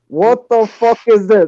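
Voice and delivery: loud, slow, put-on Irish accent.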